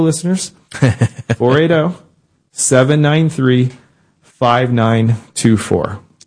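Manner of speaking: very slow, drawn-out, deliberate delivery. Speaking to listeners and giving the number to call, said slowly. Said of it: "I'm going to say it slow".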